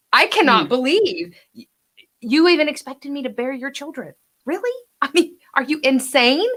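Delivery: lightly humorous incredulity. Demonstrating to an actor how a line should be read, with a little humor. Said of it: "I wanted a little bit of humor there".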